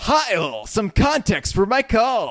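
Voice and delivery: cheesy announcer, very high, very loud, booming, swooping. Reading a Twitch stream comment aloud in a cheesy radio announcer voice. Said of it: "in my cheesy radio announcer voice".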